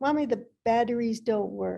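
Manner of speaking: put-on small, sweet little voice of a toddler. A mother retells what her son said to her on the potty stool; little sweet child voice. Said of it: "in his little sweet voice".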